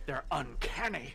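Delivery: slow, awestruck, dramatic.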